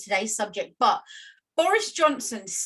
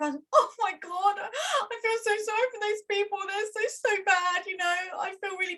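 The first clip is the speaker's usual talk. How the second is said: very high-pitched, tearful, weepy crying woman's voice; 10 semitones higher than usual. Doing an impression of a lady interviewed about Afghanistan, imitating her crying. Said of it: "can I do an impression?".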